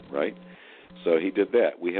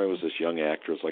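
ordinary delivery

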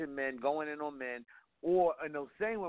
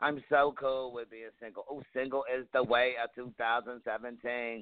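ordinary talk

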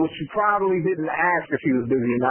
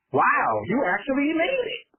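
mock-sarcastic tone, much higher pitch; 9 semitones higher than usual. Retelling the comment a driver makes on picking you up, mock-sarcastic. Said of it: "there's a sarcastic comment about".

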